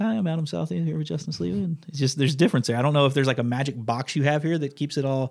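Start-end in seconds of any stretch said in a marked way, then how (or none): 0.0-1.6 flat, plain, unexcited ordinary voice, pitched up. Imitating the co-host's intro as it sounds outside the headset: flat plain intro. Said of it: "Sounds just like".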